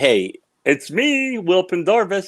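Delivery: high, slow, drawn-out crazy voice. Retelling a surprise call at work from Will Pendarvis, the speaker does his crazy voice. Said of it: "he had this crazy voice".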